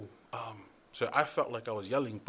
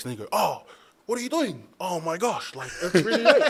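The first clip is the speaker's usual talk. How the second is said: put-on yell, much higher and louder; 8 semitones higher, 8 dB louder than usual. Retelling own bad acting on a film set: retelling own yelling. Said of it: "there's no need to yell".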